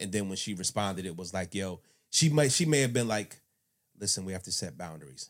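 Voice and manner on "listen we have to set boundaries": low, soft, kept-down delivery. Imagining how she answered him: imitating a soft low voice. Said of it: "low voice, like, soft".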